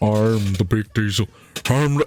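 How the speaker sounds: as deep as possible, slow, drawn-out voice. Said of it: "his fucking [name] voice".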